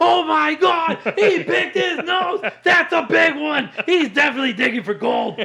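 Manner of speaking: excited announcer voice, way up high. Imitating the announcer Matt Vasgersian reacting to Ohtani, in a really high voice. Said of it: "he gets like a really high voice".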